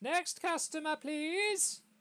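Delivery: very high, loud shouted call. Narrating a woman who leans forward, shouting out of a tent. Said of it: "she leans forward and shouts out of the tent".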